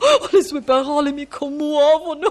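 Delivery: nearly weeping, on the verge of tears. In an acted scene, a fan meets their favourite actress, on the verge of tears. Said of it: "Quasi quasi piango".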